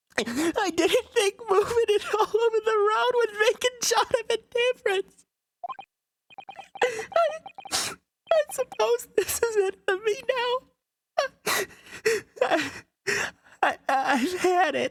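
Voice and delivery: tearful, high voice. Speaking in a character voice during a scene, crying. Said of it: "I'm actually crying".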